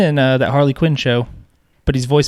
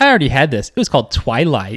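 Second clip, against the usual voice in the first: usual speaking voice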